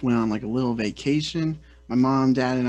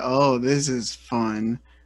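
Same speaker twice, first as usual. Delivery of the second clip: mock sarcastic, whiny, childish tone. Retelling a father complaining on vacation: imitating a sarcastic whiny kid. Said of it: "the most sarcastic, like, kid way".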